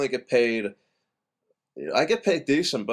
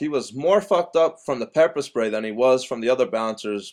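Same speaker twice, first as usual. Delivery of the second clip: ordinary talk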